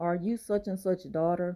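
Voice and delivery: ordinary talk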